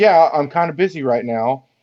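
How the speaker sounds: usual speaking voice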